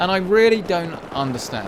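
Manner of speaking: worked-up outburst.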